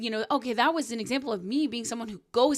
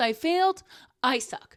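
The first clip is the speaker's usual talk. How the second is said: ordinary talk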